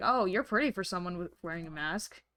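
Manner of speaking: put-on condescending voice. Acting out how someone might talk condescendingly: imitating a condescending remark. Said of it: "use certain phrases and whatnot condescendingly".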